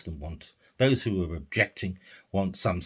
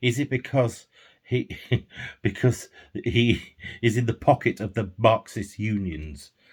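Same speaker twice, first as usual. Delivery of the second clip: words breaking up with laughter throughout; 3 semitones higher, 3 dB louder than usual. Speaker asking a question aloud, laughing while speaking. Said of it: "sorry for laughing there".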